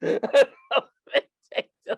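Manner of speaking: laughing, losing composure. Telling a story and struggling to keep a straight face, laughing, losing composure. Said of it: "I gotta get my composure".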